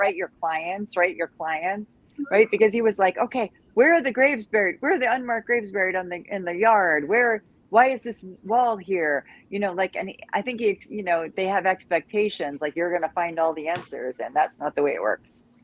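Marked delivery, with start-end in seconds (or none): none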